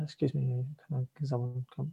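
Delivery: put-on soft, meek, hesitant, timid old lady voice. Retelling an old lady asking for help at a community centre office, imitating a timid old lady. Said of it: "She seems like really a bit timid".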